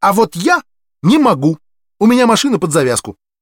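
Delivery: angry, irritated snap, high-pitched and loud. Ginny answers someone who offered her a ride; angry snap. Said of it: "сердито ... огрызнулась".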